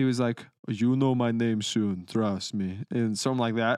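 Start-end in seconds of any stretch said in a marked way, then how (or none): 0.7-2.8 slow, drawn-out, put-on Russian accent. Speaker retells a random man threatening someone who didn't know him, russian accent. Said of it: "He's like Russian accent".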